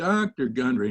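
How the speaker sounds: put-on Texas drawl. Speaker recalls a famous heart surgeon responding to his presentation: Cooley's Texas drawl. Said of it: "in a Texas drawl".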